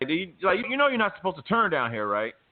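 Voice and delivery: acted-out confrontational, combative, high-pitched tone. Retelling a traffic stop, quoting the cop: imitating a combative cop. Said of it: "he's all combative and shit".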